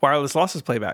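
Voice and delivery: very fast, rapid-fire, rattled-off speech. Asked how fast they can say the phrase, the speaker says it very fast. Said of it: "How fast can you say wireless".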